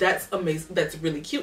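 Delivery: ordinary talk, nothing marked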